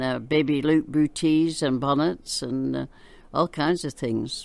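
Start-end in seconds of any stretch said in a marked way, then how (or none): none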